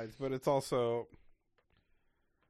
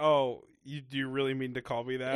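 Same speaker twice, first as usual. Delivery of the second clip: ordinary talk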